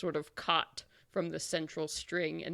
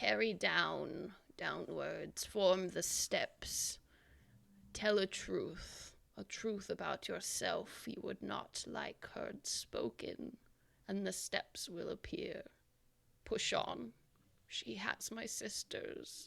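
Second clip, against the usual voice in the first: husky cracked whisper, higher and quieter; 3 semitones higher, 6 dB quieter than usual. Voicing a hanging figure warning the party: husky, quiet, cracked voice. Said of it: "in a husky, quiet, cracked voice".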